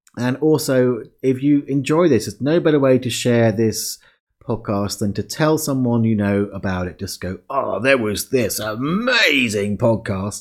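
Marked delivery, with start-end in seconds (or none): 7.5-10.4 put-on slow, slight, half-slipped-in Australian accent. A podcast host shows listeners how to recommend the podcast: almost an Australian accent. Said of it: "That was almost an Australian accent".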